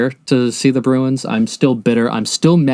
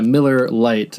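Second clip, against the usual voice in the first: usual speaking voice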